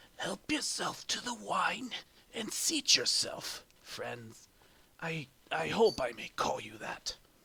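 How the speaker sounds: very dry, raspy voice. Game master voicing a figure speaking to the players, in a dry, raspy voice. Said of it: "in a very dry, raspy voice".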